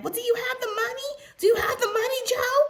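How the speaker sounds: very high-pitched, heated, mild yell. Retelling a heated call about money: imitating Teresa screaming. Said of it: "Teresa's screaming".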